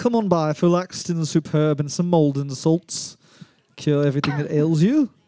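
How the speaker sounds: slight put-on British accent. Making up a shop advert for a british apple: put-on british accent. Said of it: "Is that a British accent?".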